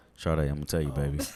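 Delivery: put-on deep voice. Speaker turns to address a woman directly, in a put-on deep voice. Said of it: "I thought you went to the deep voice".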